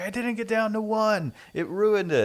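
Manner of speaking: mock screeching, very high-pitched scream. Retelling a game character's outburst after a test explosion: imitating a character screaming. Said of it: "starts screaming".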